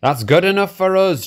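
joyful group cheer, very high-pitched and loud. Narrator voicing the passengers answering Toby's driver, cheering. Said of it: "cheered the passengers".

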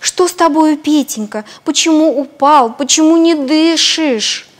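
scared, anxious voice. A hen finds the rooster fallen and not breathing; frightened. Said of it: "испугалась и спрашивает".

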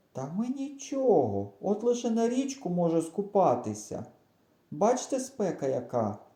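high-pitched, begging, pleading tone. Reading a story, a character answers the grandfather's warning; pleading tone. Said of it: "прохальним тоном сказав кукуруза".

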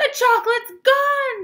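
very high, very loud shouted cry. After a blinding flash, Grandpa Joe shouts while waving his arms, shouting. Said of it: "Shouted Grandpa Joe, waving his arms".

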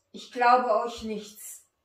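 very loud, forceful, vehement delivery. Josef answers the brothers who came to buy grain, vehement. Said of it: "antwortete Josef heftig".

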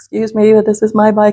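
mock trembling, very shaky, wavering, nervous voice. Retelling confronting people who had the speaker's bike, reenacting a shaky voice. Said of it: "very shaky voice".

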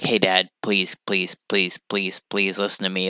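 low, soft, repeated begging. Retelling Chicken Little, the speaker acts out the son pleading with his dad, imitating someone begging. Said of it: "he had to beg".

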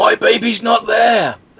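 put-on, very high, stretched, drawn-out wailing shriek. Retelling a scary comic where a woman screams at a girl: imitating a woman screaming. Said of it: "the woman screams out".

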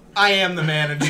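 flat, stone-faced tone. Retelling a coworker's reply to an angry customer: imitating a deadpan reply. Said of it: "just dead face, stone".

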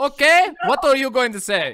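put-on German interrogator voice, very high, very loud. Host asks a guest to state the point, German inquisitor voice. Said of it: "in the voice of a German inquisitor".

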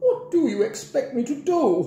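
very high, slow, drawn-out complaining grumble. Mrs. Trifle answers Grandpa, who says there is no time: complaining. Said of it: "complained Mrs".

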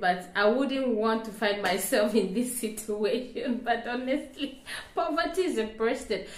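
speaking while laughing, words broken by laughter. Speaker talking to the audience, laughing while talking. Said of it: "Sorry I'm laughing".

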